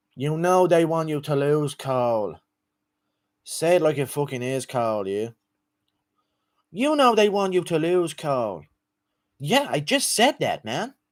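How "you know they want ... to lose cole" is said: fight-night trash talk in a fighter's voice. Doing a requested impression of a fighter taunting Cole Miller: Conor McGregor impression. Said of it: "McGregor versus Cole Miller impression".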